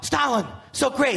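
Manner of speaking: fawning, earnest, gushing late-night talk-show host voice. Impression of a talk show host interviewing Stalin, Jimmy Fallon impression. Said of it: "Here's my impression of Jimmy Fallon interviewing Stalin".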